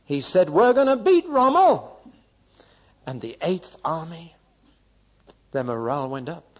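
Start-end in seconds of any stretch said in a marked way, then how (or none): 0.5-1.9 comical shrill voice, very high and very loud. Montgomery speaks after taking over at El Alamein during World War II, in a funny high-pitched Montgomery voice. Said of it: "in that funny high-pitched voice".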